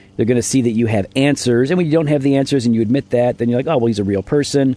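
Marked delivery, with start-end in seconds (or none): none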